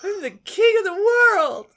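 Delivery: very high, loud, regal queenly voice. Redoing a catchphrase on request, in a queenish voice. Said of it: "Can you do it in a queenish voice?".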